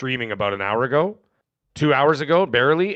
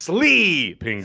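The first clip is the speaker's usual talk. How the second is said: stressed E in 'sleeping'; 4 semitones higher than usual. Repeating a game title after being misheard, testing the stress: stress on 'Sleeping'. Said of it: "maybe I put an emphasis on the E?".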